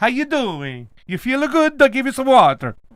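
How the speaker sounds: put-on Italian accent, Brooklyn-leaning. Showing how they talk to their basil plants, in an Italian accent. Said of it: "I speak with an Italian accent to the basil".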